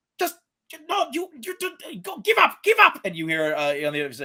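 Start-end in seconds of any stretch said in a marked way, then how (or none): 0.2-3.0 put-on high-pitched yelling, German accent. Voicing someone heard yelling in a commotion: character yelling in German accent. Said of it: "you hear at first someone yelling, i-, uh, in German".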